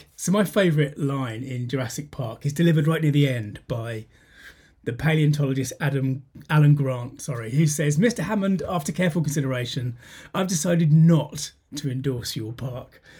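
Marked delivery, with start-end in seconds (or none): none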